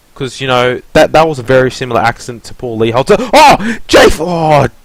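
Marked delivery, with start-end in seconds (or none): 3.2-4.7 very high, stretched-out, drawn-out excited cry. Commentating on a race incident on track, loud excited outburst. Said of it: "got a little excited".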